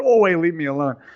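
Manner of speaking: plain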